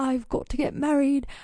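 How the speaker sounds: fake, put-on British accent. Voicing someone stuck in their late 20s, in a put-on british accent. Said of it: "with a British accent".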